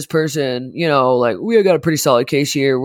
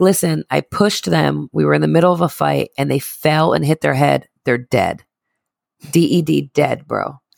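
usual speaking voice

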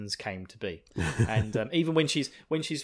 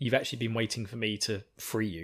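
ordinary delivery

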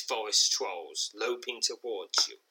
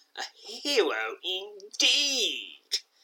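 very high, scornful, jeering mockery; 9 semitones higher than usual. Narrator reading a masked swordsman's remark after a troll is slain, laced with scorn. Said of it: "his voice laced with scorn".

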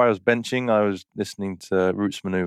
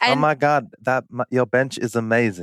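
put-on female voice, much slower; 4 semitones higher than usual. Doing a second take of a compliment he denies giving, in put-on female voice. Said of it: "mix between a cross-dressing British California person".

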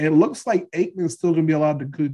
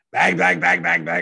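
exaggerated put-on sportscaster voice and noises. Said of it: "you got a Berman impression".

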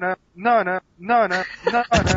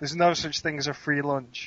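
ordinary delivery

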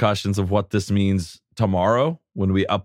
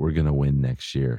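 put-on whisper, pitched lower; 8 semitones lower than usual. Acting out Justin Herbert leaning in at the meal: whisper as Justin Herbert. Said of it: "Justin leans in and whispers".

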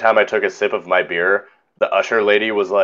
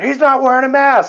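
put-on shrill, very high-pitched screaming; 4 dB louder than usual. Retelling what someone screamed at security: imitating someone screaming. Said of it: "she started screaming".

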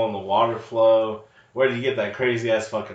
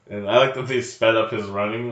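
normal talking voice

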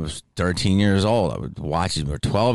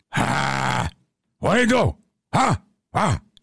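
very slow, high, fired-up, every word stretched; 8 semitones higher than usual. Retelling what an actor told a friend on set: Al Pacino impression. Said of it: "I don't know if I'm doing them right".

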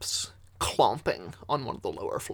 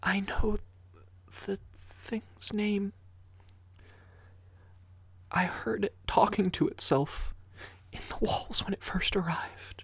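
put-on childlike whisper, higher; 11 semitones higher than usual. Voicing a scared child whispering in someone's ear: whispering as a child. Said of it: "Fifth begins to whisper in your ear".

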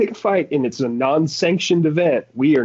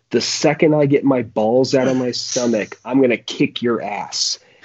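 put-on deadly serious kid voice. Retelling a beaten kid's threat to a friend: dead serious threat. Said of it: "in the most dead serious face".

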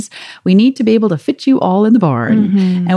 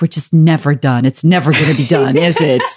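put-on mutter under the breath, lower; 5 semitones lower than usual. Retelling what a son said walking the yard: imitating Thaddeus muttering under his breath. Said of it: "kind of muttered under his breath".

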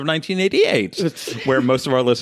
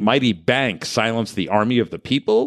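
normal talking voice

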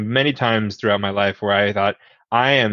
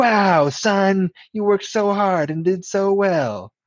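put-on very high childlike voice; 10 semitones higher than usual. Showing how to word a compliment to a kid, in a put-on kid voice. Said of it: "Some kid voice".

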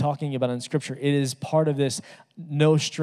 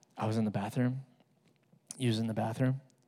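put-on child's whisper, lower and quieter; 4 semitones lower, 8 dB quieter than usual. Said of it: "She's whispering really quietly".

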